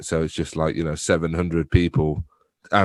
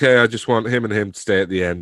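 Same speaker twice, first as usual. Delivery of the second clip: usual speaking voice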